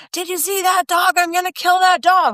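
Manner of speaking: play-acted, shrill, very high screaming. Retelling what a gentleman down the street yelled about a dog: imitating a man screaming.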